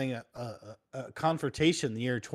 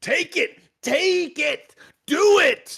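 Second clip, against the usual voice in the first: intense, shrill, drawn-out yell, slow, high and huge; 10 dB louder than usual. Describing a famous pep talk video: intense Shia LaBeouf pep talk. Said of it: "weird pep talk intense thing".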